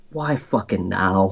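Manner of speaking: hushed, muttered under the breath. Retelling own words while filming a scene: imitating muttering under breath. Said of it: "And then under my breath".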